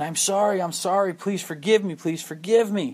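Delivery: acted apologetic, pleading, begging voice. Telling a story, voicing the king begging his best friend, acting out apologetic pleading. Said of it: "very apologetic to his best friend".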